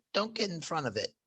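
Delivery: faint, strangled, very quiet high choked voice. Narrating a game scene, a voice comes over the intercom, very quiet choked voice. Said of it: "a very quiet uh, voice choked out".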